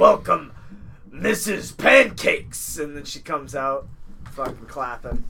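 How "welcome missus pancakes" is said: put-on club DJ announcer voice, much slower. Joking with another speaker about a strip club DJ, strip club DJ voice. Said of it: "that's gonna be like the strip club DJ".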